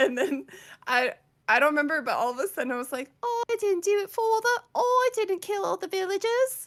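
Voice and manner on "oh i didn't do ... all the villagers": put-on very high-pitched little boy voice, British accent. Recalling a day spent doing accents together: little British boy accent. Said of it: "doing a little British boy accent".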